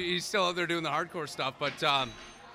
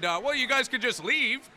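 mock yelling, much higher pitch; 6 semitones higher than usual. Retelling what a random person yelled at them, retelling a yell. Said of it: "we got yelled at again by another random person".

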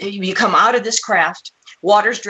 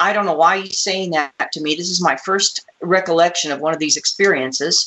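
ordinary talk, nothing marked

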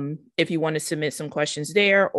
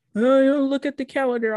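high, teasing, mocking voice; 10 semitones higher, 4 dB louder than usual. A host imitates the show's Patreon supporters, in a mocking imitation of Patreons. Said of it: "I'm mocking y'all".

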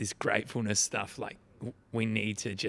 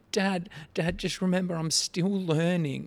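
mock sobbing, high, through-the-tears voice; 8 semitones higher, 4 dB louder than usual. Father retelling his eight-year-old daughter's reply after the card game: imitating Asha crying. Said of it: "she's just crying her eyes out".

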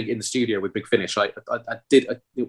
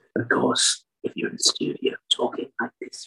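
whispered, very, very hoarse, hushed, wizened rasp; 4 dB quieter than usual. Describing studio recording as a wizened Sontaran wizard, in a very hoarse voice. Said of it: "very, very hoarse".

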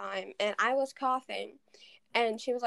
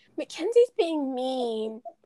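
put-on mock-sad voice; 6 dB louder than usual. Retelling how your sibling complained to Mom at goodnight, imitating her acting all sad. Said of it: "last night acting all sad".

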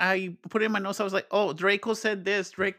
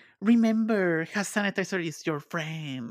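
put-on evil hammy voice, slower; 3 semitones lower than usual. A speaker quotes an uptight character, in his evil, hammy voice. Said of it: "his evil, hammy voice".

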